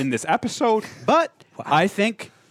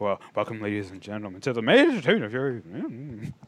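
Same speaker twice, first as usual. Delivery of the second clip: halting, mumbled, stumbling, tripping-over-words delivery; 3 semitones lower, 3 dB quieter than usual. Teasing someone present about how he used to talk, imitating mumbling and stumbling. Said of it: "He would be like mumbling and stumbling".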